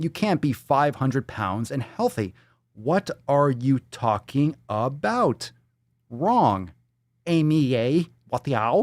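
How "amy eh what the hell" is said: insulting, fake, put-on Chinese accent. You are trying to insult a woman, saying it in a mock chinese accent. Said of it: "I'm saying it with like a fucking Chinese accent".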